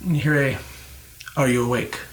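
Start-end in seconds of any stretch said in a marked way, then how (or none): 1.4-2.0 stern tone, lower. Voicing a voice heard in the character's head: stern voice. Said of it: "It's a stern voice just starts talking".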